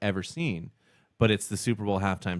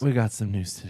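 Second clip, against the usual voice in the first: mock gloomy, sad-sounding delivery. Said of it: "That sounds so sad the way you said that".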